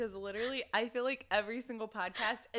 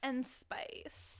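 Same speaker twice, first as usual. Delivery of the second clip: breathy, sultry, sensual whispered hush; 2 semitones higher, 5 dB quieter than usual. Co-hosts introducing a spicy episode's sponsor, sensual voice. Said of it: "That's my real sensual voice".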